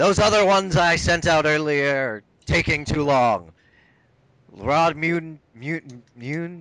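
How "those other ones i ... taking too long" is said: deep, loud, big kobold bellow. Narrating the game, the speaker voices King Torg summoning the players: deep bellowing kobold voice. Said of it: "he bellows out in his deep deep kobold voice".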